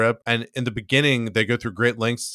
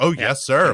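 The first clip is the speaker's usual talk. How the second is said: put-on sarcastic voice, higher; 3 semitones higher, 3 dB louder than usual. Retelling a scene of sarcastically saluting an officer: imitating Danny's sarcasm. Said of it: "sarcastically, like, saluting him and being like".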